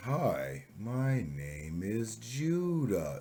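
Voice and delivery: overdone, exaggerated, very slow, careful, sing-song speech. Giving advice on talking to Japanese listeners, showing the overdone version: insultingly over-slow speech. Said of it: "not to the point where you're insulting them".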